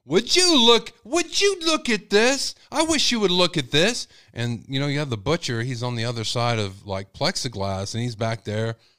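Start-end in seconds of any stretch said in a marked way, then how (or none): 0.1-4.0 mock very high, drawn-out shout at top of lungs. Speaker acts out a man looking at a price, retelling a man shouting. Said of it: "he would talk like the top of his lungs".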